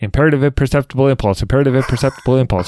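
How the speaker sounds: very fast, rapid-fire rattled-off delivery.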